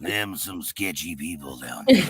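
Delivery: low TV crime-procedural delivery. Remarking on sketchy people down there: Criminal Minds-esque voice. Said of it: "That's a very Criminal Minds-esque voice".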